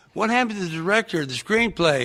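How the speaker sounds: high, stunned, blurted outburst. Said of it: "And I went".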